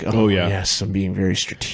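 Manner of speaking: mock thoughtful, pondering musing. Retelling how a player at the booth reacted: imitating a pondering chin-scratcher. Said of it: "the real chin scratcher".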